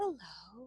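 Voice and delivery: gentle, kind, sweet-toned voice. Explaining tone of voice, showing a greeting said as a sweet greeting. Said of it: "Is it going to be sweet?".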